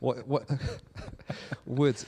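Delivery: speech broken up by laughter.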